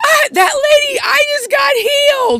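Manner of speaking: wild cry, very high, slow and drawn out. Retelling a man shouting as he goes back into the restaurant: imitating someone screaming. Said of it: "and he screams".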